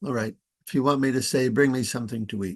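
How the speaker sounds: very nonchalant, fast, offhand tone.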